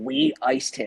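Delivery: rough, raspy, gravelly spirit voice, pitched high. Retelling what a voice said through a spirit box: imitating a raspy gravelly voice. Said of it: "what sounded like the same raspy, like, gravelly kind of voice came through and said".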